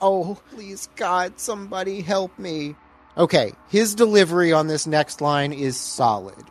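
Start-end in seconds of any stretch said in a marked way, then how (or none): 0.0-2.8 put-on whimpering, pleading cry. Describing a film scene where a girl is threatened, imitating whimpering.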